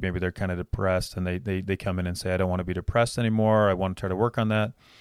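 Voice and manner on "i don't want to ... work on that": ordinary talk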